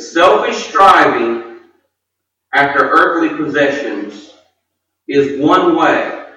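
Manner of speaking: measured, slow, deliberate, one word at a time. Speaker slowing down so the audience can write down the point: slow, deliberate. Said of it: "I'm going to try to say my points slower".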